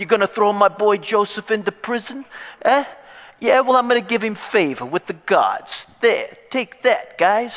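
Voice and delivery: put-on Bronx accent. Retelling a scene, the speaker voices a man protesting Joseph's imprisonment, Bronx accent. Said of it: "Suddenly, he's from the Bronx".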